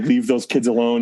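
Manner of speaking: plain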